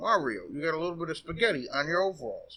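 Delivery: ordinary talk, nothing marked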